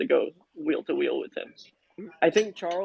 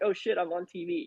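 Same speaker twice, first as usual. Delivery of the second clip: ordinary delivery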